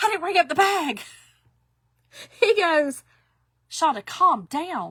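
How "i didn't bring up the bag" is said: mock flustered, frantic, high panicked blurt. Retelling what she said to Jim, acting out her past panic. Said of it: "I was panicking".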